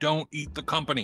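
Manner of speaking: firm, stern but courteous. Speaking in character to a dragon: stern but not rude. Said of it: "sternly but not rudely".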